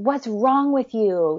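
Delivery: exasperated, infuriated, mild yell. Retelling yelling at a daughter: imitating own past yell. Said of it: "I yelled at her".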